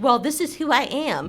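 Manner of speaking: normal talking voice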